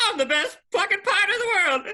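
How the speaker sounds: very high, loud delivery. Imagining a comic actor playing a pirate captain: Eddie Murphy as Jack Sparrow. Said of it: "Can you imagine Eddie Murphy, Eddie Murphy as Jack Sparrow?".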